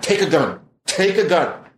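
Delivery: mock frightened voice. Retelling a warning from a scared caller: imitating a scared man. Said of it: "he got really scared".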